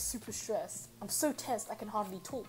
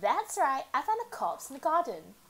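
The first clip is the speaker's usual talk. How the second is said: put-on high, swooping mean-girl voice; 5 semitones higher, 6 dB louder than usual. Voicing a character and slipping into a stereotypical blonde mean girl voice. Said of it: "stereotypical blonde mean girl".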